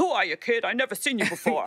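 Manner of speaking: put-on gruff, tough, hard-boiled New York accent. Retelling how a legendary photo editor greeted you, imitating a gruff, hard-boiled New York editor. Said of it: "like hard-boiled New York".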